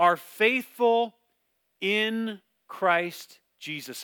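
slow, careful, deliberate reading aloud.

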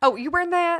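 put-on old Southern woman voice. Doing a bit with another speaker, in an old Southern mom voice. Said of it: "I love to talk like an old Southern mom".

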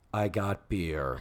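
put-on flat deadpan, very low and quiet. Retelling a scene, speaker gives Joe's reply to Mrs. Garrett: retelling a deadpan line. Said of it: "And Joe, deadpan".

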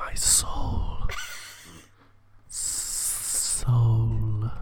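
sinister, evil put-on villain voice. Joking with a co-host, speaker does an evil voice. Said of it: "This is the evil voices that we can do".

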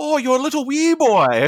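very high, sing-song, put-on Irish or Scottish lilt. Joking about a movie's Wee Boys, in an Irish or Scottish accent. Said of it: "it would only be better if it was in like an Irish or Scottish accent".

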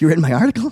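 starry-eyed, starstruck, awed voice. Retelling own reaction on a phone call: imitating own starstruck question. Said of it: "I go like this. I go".

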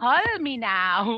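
loud put-on Jamaican accent. Asked to try a Jamaican accent, speaker attempts it for Jill. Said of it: "If you can make a Jamaican accent".

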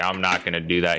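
ordinary talk

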